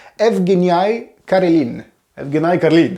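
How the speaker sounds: put-on Russian accent.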